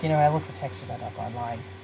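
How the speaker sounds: low, soft voice. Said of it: "he has that voice".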